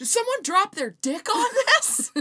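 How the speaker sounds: booming, very loud, shrill, high-pitched blurt. Retelling a remark made while walking past: retelling saying it loudly. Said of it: "I said it so loudly".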